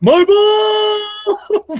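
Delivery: play-acted, very high shrieked yell, "ball" drawn out. Retelling how someone screamed while going across the course, retelling a scream. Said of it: "he screams".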